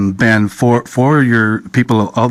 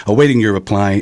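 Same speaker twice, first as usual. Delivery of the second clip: ordinary delivery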